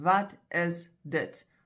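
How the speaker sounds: slow and clear, each word separated. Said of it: "Then you'll say very clearly".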